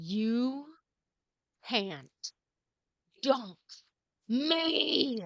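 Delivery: deliberate, very slow monster growl, "me" drawn out. Narrating a bugbear's reply after being punched, in a growling bugbear voice. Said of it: "he growls at you, and he just says".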